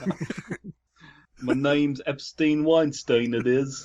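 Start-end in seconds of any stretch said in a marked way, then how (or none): 1.4-3.9 high slow put-on British accent. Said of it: "I don't know why he's British".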